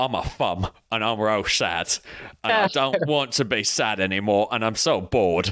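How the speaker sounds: put-on London Cockney accent. Retelling a prank where they voiced a thumb: Cockney accent. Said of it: "Is that the accent you did for it?".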